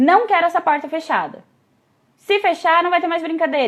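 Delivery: blunt, no-nonsense tone. Retelling an uncle's warning about the closed bedroom door: imitating a blunt, curt order. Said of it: "ele era muito direto, assim, muito seco".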